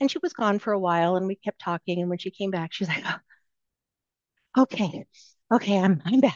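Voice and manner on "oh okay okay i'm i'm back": distressed, unsettled voice, sounding anything but okay. Retelling a colleague returning to a call: imitating someone who doesn't sound okay. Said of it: "you don't sound okay".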